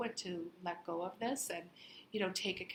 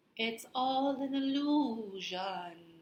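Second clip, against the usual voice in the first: high, very slow, drawn-out, spooky ghostly voice; 5 semitones higher, 7 dB louder than usual. Imitating how a sister says a line, ghost voice. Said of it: "I'll say it how my sister says it. ... She does it like a ghost".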